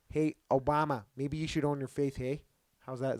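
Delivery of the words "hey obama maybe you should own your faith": put-on Midwestern accent. Trying out accents with another speaker, address Obama in a put-on Midwestern accent. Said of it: "let's do like a Midwestern".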